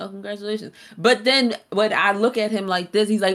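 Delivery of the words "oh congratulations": soft, totally unimpressed, nonchalant acted delivery. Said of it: "hit me with the most nonchalant congratulations".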